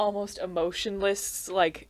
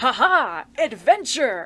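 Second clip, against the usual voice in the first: super hyped-up, loud, swooping anime hero voice; 3 semitones higher, 8 dB louder than usual. Describing how a character might have sounded, hyped-up shonen anime hero. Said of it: "super hyped up shonen anime protagonists".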